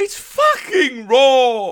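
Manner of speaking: very high, very loud yell, raw and drawn out. Doing a couple of impressions, this one of him listening to an unedited episode, Gordon Ramsay impression. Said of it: "Here's my impression of Gordon Ramsay".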